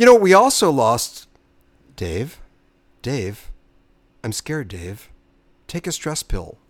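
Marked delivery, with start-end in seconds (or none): 2.0-6.5 very soft, quiet, low-key machine voice. Introducing an actor who has died, quote his computer role in a Hal from 2001 voice. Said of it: "Hal from 2001".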